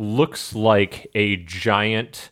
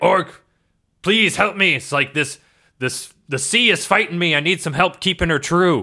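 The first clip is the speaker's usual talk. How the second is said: raised, pitched-up, pleading yell; 9 semitones higher than usual. Voicing a captain at the helm in a storm: yelling for help. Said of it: "he yells at Orc and he's like".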